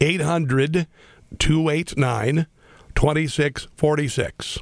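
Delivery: deliberately very slow delivery. Giving out a phone number for listeners to call, saying it very slowly. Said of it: "Let me say it slowly".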